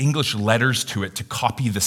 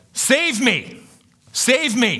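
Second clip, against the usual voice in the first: yelling, very high, very slow, drawn out; 3 dB louder than usual. Acting out someone who fell overboard into the water: imitating a shout for help. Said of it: "you would shout".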